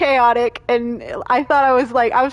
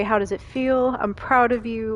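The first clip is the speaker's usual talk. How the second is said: ordinary delivery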